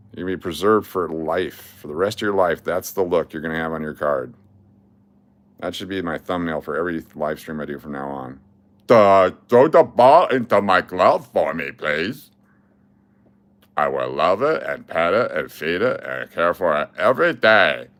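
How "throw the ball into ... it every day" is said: silly, cartoonish put-on voice, goofy, swooping, drawn-out. Show what he was doing when he did a voice, as an impression of his impression. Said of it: "That's my impression of what his impression was".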